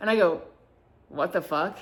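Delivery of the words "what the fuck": play-acted, curt, blunt, rude-sounding blurt. Retelling a reply to a compliment: retelling a rude-sounding reply. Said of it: "but it came off rude".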